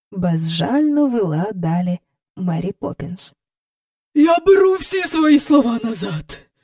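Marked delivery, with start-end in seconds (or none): 4.2-6.4 high, strained words squeezed out with effort. Miss Andrew, cowering before Mary Poppins, forces the words out. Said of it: "видушила з себе міс Ендрю".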